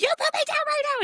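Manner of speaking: put-on screeching, pitched way up. Recalling screaming in his ear as he carried her to the car, retelling a screech. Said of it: "I'm like screeching in his ear".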